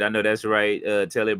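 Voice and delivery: ordinary talk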